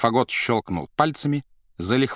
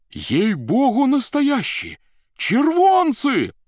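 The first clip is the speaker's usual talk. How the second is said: joyful, happy shouting; 13 semitones higher, 4 dB louder than usual. People in the gallery cry out about the money, shouting joyfully. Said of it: "кричали с галерки радостно".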